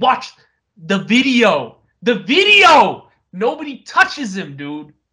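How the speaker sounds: mock, slow, drawn-out, high-pitched screaming. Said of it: "I am screaming right now".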